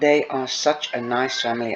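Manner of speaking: ordinary delivery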